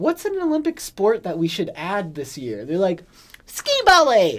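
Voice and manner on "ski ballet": put-on shrill, shouted, very high, loud small-child voice. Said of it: "his four-year-old voice".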